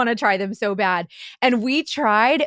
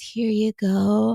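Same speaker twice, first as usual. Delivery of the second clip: mock seductive, sultry, sexy come-hither tone. Retelling a stranger handing over a card: imitating a sultry voice. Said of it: "all sexily".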